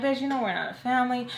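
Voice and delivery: unimpressed, dismissive, brushing-off tone. Retelling own reply while rolling eyes: imitating own eye-rolling dismissal. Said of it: "So I roll my eyes".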